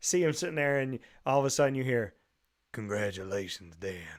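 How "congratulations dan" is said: put-on low, soft, deep dad voice. Retelling a greeting from an anniversary video, imitating a deep voice. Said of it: "and like that deep voice".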